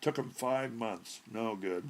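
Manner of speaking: ordinary delivery, nothing marked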